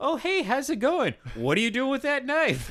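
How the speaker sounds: put-on very high, cheesy, hokey horror-movie young-woman voice. Retelling a trailer scene of a young lady leaving a cabin: imitating a hokey young lady. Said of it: "really hokey kind of like, like a young lady walking out of a cabin going".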